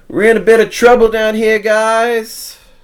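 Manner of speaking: shrill, very loud shout, "guys" stretched. Voicing a character who yells a warning to the party: Olo yelling. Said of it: "as Olo yells out".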